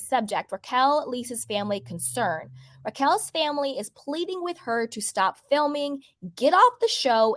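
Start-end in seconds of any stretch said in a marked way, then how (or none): none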